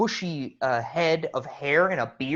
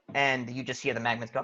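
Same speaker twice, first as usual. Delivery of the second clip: ordinary delivery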